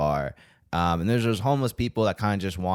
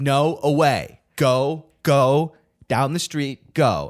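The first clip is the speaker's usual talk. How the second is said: very slow, raised scolding tone; 7 semitones higher, 6 dB louder than usual. Describing a man sending a homeless man away, imitating him scolding like a child. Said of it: "he talked to it like a misbehaving child".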